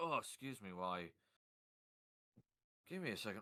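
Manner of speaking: out of breath, winded. Pausing while describing a scene after being hit in the chest: winded. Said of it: "got winded".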